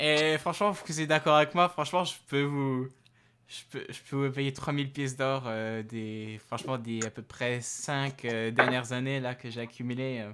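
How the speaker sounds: put-on light Russian accent. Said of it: "dire avec un accent un peu russe".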